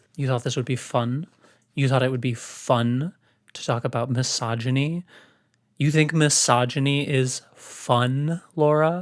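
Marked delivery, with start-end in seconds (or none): none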